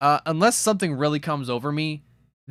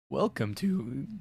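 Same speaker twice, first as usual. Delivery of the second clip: voice cracks, much quieter; 8 dB quieter than usual. Opening a stream with a welcome, the voice cracking. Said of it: "that was a voice crack".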